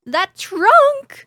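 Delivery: very high, very loud, shrill, panicked terrified shriek. Narrator voicing a young elf fleeing a trunk, screaming in panic. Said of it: "a young elf screams".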